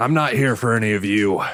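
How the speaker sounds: gruff, rough put-on bounty hunter voice. Narrating a scene as shooting starts outside the door, gruff bounty hunter voice. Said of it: "you hear the gruff voice of the bounty hunter".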